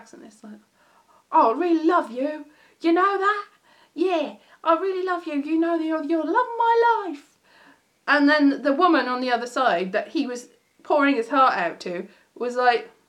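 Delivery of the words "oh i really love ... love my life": bad, failed put-on Essex accent, pitched up. Retelling a man in an advert declaring love to a woman: bad essex accent. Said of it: "I can't do a Essex, a Essex accent".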